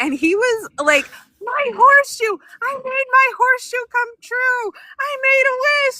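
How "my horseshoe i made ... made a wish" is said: put-on very high kid yell, top of the lungs. Mother retelling her son's reaction in the street, imitating a child screaming. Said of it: "he's screaming this at the top of his lungs".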